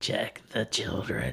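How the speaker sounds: sinister, creepy, hushed whisper. Storyteller acting out a stranger's repeated phone call, in a put-on creepy voice. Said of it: "says in a creepy voice".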